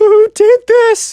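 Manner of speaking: put-on very high, whimpery sob with rage. Retelling what the Minecraft kid said in shock: mock crying, whimpery voice. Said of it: "Kind of like a crying, whimpery voice".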